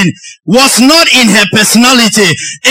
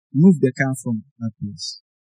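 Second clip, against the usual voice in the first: very soft, very low, hushed, gentle soft-spoken voice; 11 semitones lower, 13 dB quieter than usual. Retelling what a girl said after getting up from her stool, in a soft-spoken voice. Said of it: "in her soft spoken voice said".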